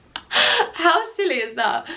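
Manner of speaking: choked-up laughing talk.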